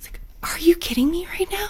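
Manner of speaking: acted, fed-up, incredulous exasperation, high and soft. A mother retells her reaction to her child yelling about the new scooter, retelling her exasperation. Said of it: "mother recounts frustration at ungrateful child".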